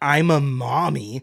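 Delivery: saccharine, mocking, cutesy sing-song lilt. Complaining about a cast member's phrasing, imitating a cutesy "I'm a mommy". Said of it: "You don't need to be like".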